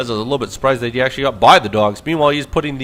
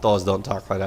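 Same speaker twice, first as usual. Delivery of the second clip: usual speaking voice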